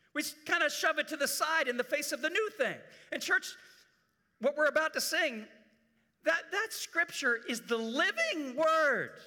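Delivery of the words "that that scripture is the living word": voice cracking and breaking mid-line. Speaking to the church about scripture; voice cracking. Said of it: "My voice just cracked on that one".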